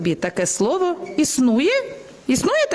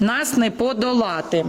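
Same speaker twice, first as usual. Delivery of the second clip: usual speaking voice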